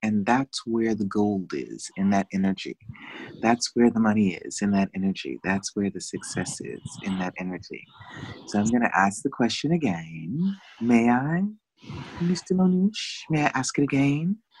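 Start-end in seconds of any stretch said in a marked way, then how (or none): 10.8-14.3 seductive, alluring, coaxing tone. Speaker asking the listener whether they may ask the question again, seductive voice. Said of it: "Seductive voice".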